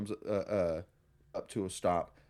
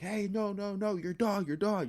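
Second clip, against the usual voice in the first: put-on very high, urgent, alarmed yelling; 11 semitones higher than usual. Telling a story about a woman warning them about their dog, retelling an alarmed yell. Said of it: "she's yelling like".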